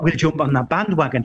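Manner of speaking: ordinary delivery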